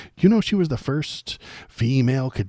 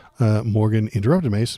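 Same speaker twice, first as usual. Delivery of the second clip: usual speaking voice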